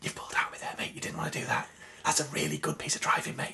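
soft, breathy whisper under the breath. Telling what he says to drivers who pull out on him, in a whisper. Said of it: "I just generally whisper to them".

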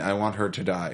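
ordinary talk

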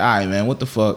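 ordinary delivery

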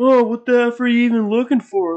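man's high, loud, angry yell. Retelling an argument, the speaker quotes a man yelling at a woman digging through garbage, retelling a man's yell. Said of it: "the guy's yelling".

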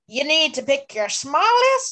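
put-on failed pirate accent that never lands. Reading out the tree mail challenge note, trying a failed pirate accent. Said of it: "I was trying to do a pirate accent".

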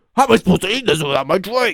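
put-on really angry, high-pitched, griping complaint. Retelling a cartoon scene, imitating an angry customer. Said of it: "he gets really mad".

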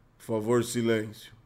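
low, hushed half-whisper under the breath. Recalling a man who kept telling everyone to shut up, imitating his half-whisper. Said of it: "ele sussurrava né".

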